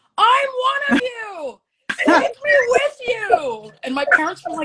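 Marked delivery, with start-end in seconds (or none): 0.2-3.7 put-on very high, very slow kid's scream. Retelling a first concert, standing on a chair: imitating own childhood screaming. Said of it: "I was screaming at them".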